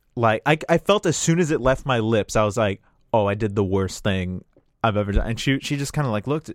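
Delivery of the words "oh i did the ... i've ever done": normal talking voice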